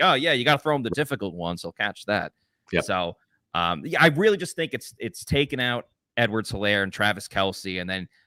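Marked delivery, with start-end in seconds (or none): 0.0-2.3 put-on sarcastic coach voice. Discussing a player, the speaker quotes the coach's remark: mock-sarcastic Todd Bowles quote. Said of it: "being very sarcastic about Jamel Dean".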